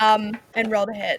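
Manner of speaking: ordinary delivery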